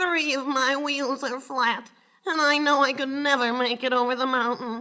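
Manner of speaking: put-on tired old engine's flat, level whining voice. Reading a story aloud, voicing a tired old engine: whining voice. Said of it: "replied in a whining voice".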